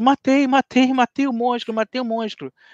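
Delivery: put-on hard crying, high, sobbing, in tears. Speaker reenacts what he told his mother as a child after a videogame, retelling sobbing hard. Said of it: "eu chorando aos prantos".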